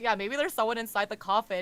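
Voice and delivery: sarcastic delivery. Retelling a character's line before knocking on a coffin: imitating a sarcastic remark. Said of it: "and it was sarcastic".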